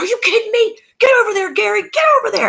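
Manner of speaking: put-on very high-pitched, aggressive, fight-ready yelling. Retelling a husband yelling at kids during a game: imitating a husband yelling. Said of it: "Eric is yelling at these jokers like".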